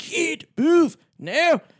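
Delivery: put-on shrill, loud, high-pitched yell in a Scottish accent. Act out the guy in So I Married an Axe Murderer yelling at the kid, Mike Myers yelling in Scottish accent. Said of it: "just yelling at the kid".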